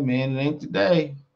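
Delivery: ordinary delivery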